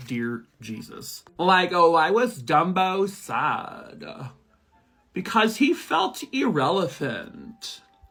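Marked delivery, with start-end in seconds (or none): 1.4-7.8 slow, sing-song put-on Valley Girl voice. Reading a joke card aloud as required, put-on Valley Girl voice. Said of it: "I have to read this joke in a Valley Girl voice".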